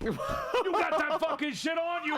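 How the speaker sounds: put-on very high, slow drunk voice. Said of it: "also drunk was just like".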